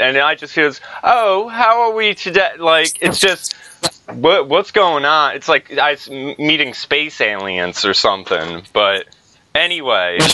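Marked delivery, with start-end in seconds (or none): 1.0-2.5 put-on, pitched-up British accent. Explaining why british accents feel odd to you, in a put-on british accent.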